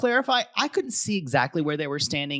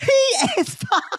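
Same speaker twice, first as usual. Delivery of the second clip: playful, comic, very high-pitched delivery; 4 dB louder than usual. Retelling how a cast member reacted to a man walking in: imitating a comic delivery. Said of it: "in comic fashion".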